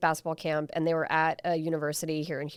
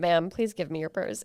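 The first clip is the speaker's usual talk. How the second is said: ordinary talk, nothing marked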